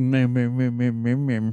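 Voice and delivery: put-on nerdy voice. Doing an impression of himself among the nerds: impression of himself as a nerd. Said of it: "That is a very good impression of you".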